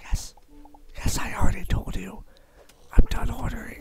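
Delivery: imitated, very softly spoken voice. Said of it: "They speak as softly as possible".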